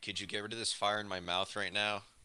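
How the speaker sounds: ordinary delivery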